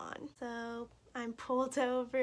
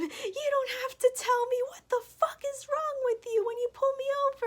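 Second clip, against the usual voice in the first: very high, loud, heated outburst; 14 semitones higher, 8 dB louder than usual. Retelling being pulled over by an officer: retelling yelling at an officer. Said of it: "was yelling at him".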